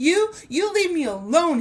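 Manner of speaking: high, loud frightened little goblin squeak. A narrator reads a little goblin shaking with fear as he answers Herschel, squeaking. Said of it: "he squeaked".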